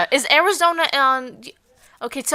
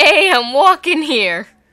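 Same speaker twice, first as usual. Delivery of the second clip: put-on New York accent, louder; 2 semitones higher, 6 dB louder than usual. Repeating the line after being asked again: new york accent. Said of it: "Please say it again".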